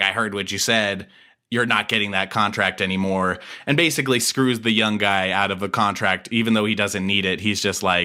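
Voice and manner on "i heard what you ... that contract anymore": usual speaking voice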